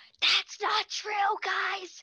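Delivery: loud stage whisper. A game narrator voices Michael speaking up to the group: Michael's loud whisper. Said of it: "kind of whispers like loudly".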